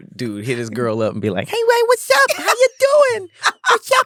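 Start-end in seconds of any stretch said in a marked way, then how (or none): 1.5-4.1 mock baby talk, higher pitch. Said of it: "our baby voice too".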